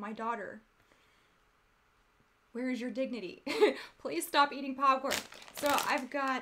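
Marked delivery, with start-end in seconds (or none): 0.0-5.1 mild, gentle, kindly divine voice from above. Joking about not stopping eating popcorn, voicing a gentle God. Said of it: "the gentle voice of God saying".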